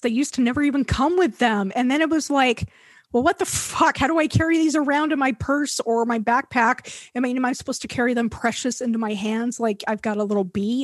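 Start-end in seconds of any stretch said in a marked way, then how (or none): none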